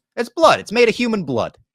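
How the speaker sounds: put-on high, loud, booming New York accent. Retelling what a sanitation worker told him, in a new york accent. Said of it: "just in his New York accent".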